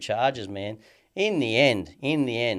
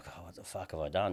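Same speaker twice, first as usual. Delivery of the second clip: mock mutter under breath, lower and quieter; 4 semitones lower, 10 dB quieter than usual. Retelling what the ex-girlfriend said in court: imitating someone muttering under her breath. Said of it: "under her breath, she was like".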